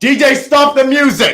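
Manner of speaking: loud drawn-out yell. Addressing a crowd and telling the DJ to stop the music: yelling at the DJ. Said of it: "Sorry about yelling".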